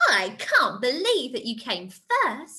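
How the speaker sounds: astonished, disbelieving, surprised exclamation with swooping pitch. Teaching exclamation marks with an example sentence, surprised. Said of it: "Or if you're surprised".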